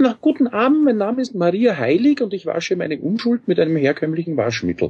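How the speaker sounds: put-on falsetto, very high. Recalling a costumed christmas bit, speaking the character's line in a falsetto voice. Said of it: "habe dann mit Fistelstimme gesagt".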